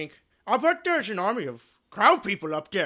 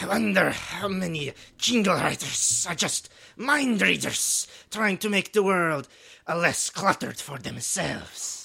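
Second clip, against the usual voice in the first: burbling, hissing, bubbly fish-creature voice. Playing a challenge card, a player speaks as a hissing fish person, bubbly fish-person voice. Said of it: "You got real bubbly in that".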